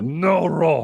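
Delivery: high-pitched monster character voice. Retelling Dikembe scolding a child after slapping away a roll: Dikembe voice like Cookie Monster. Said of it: "because he sounds like Cookie Monster".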